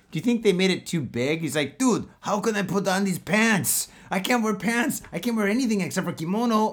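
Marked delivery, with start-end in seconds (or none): 1.7-6.7 high-pitched put-on Mexican accent. Imagining the gang boss complaining he can't wear pants: put-on mexican accent. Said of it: "that's like a Mexican accent".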